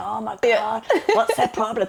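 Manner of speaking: huffy outburst, huffing and puffing. Retelling someone stuck in a traffic jam: imitating Steve huffing and puffing. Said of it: "he's huffing and puffing".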